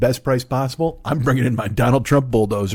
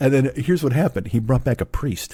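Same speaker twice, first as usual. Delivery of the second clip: ordinary talk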